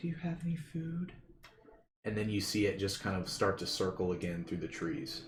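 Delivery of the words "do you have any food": hushed, soft, high feminine creature voice. Voicing a creature that looks down at you, in a female voice. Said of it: "you hear like that female voice".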